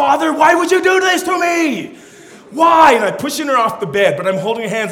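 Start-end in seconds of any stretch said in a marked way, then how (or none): 0.0-2.9 mock betrayed, indignant, high-pitched outraged yelling. Father voicing his baby daughter as he pushes her off the bed, acting out an outraged yell. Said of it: "she's yelling at me like".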